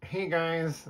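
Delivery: high, funny little voice. Imagining how Noah, a character in the speaker's books, says hello: high funny Noah voice. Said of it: "Noah has kind of like a high, funny sounding voice".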